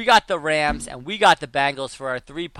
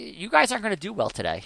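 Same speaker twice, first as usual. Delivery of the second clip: mock light, polite, sing-song, very sarcastic tone; 5 semitones higher, 5 dB quieter than usual. Retelling teasing rival fans: imitating own sarcastic taunt. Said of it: "super sarcastic".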